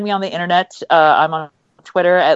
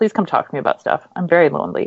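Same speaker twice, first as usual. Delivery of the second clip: put-on sad, mournful voice. A writer ending a self-introduction to listeners, mock-sad plea. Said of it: "It just sounded sad".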